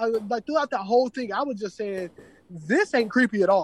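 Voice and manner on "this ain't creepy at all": sarcastic tone, meaning the opposite. Retelling own remark while watching a show: imitating own sarcastic remark. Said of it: "in a sarcastic way".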